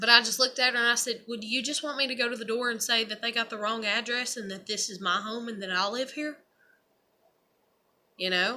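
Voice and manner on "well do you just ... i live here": ordinary talk, nothing marked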